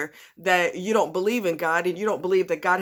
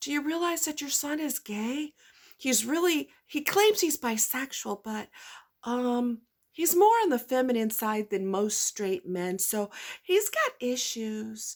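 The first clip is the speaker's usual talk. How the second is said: quiet, hushed, pitched-up voice, said softly; 5 semitones higher, 4 dB quieter than usual. Speaker showing they can copy someone's tactic, in a quiet voice. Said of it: "I can say it in a quiet voice too".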